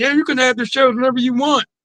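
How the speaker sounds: mock, falsely sweet and two-faced tone.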